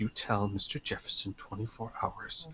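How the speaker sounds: hushed, low volume. Retelling what a man said, the speaker quotes him very quietly. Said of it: "he says very quietly".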